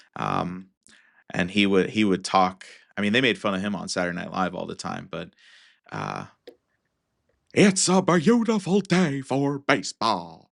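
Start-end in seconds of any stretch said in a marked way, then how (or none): 7.5-10.3 bad announcer voice, loud, slow and swooping. Naming favorite baseball announcers, doing a terrible Harry Caray impression. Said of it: "probably a terrible Harry Caray version".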